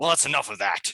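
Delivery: loud, high growl. True Silverheels pipes up at the whole group, growling. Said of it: "just kind of growls at you all and just says".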